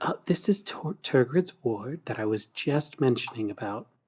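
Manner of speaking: whispering. Voicing a character who leans in to the table: whispering. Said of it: "Syntax will whisper to the table".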